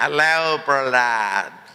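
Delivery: American speech with Punjabi tinge. Retelling how Mike greeted Prahlad at the office, in Mike's Punjabi American accent. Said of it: "in his typical Punjabi American accent".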